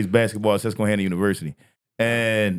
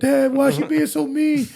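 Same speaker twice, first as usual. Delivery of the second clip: put-on very high, tearful, crying child voice. Retelling how a son complained after losing: imitating a crying child. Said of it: "he would just cry like".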